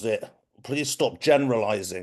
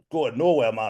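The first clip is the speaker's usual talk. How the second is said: put-on Geordie accent. Retelling saying a line back in the listener's accent, Geordie accent. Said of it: "I did it in your accent... Geordie".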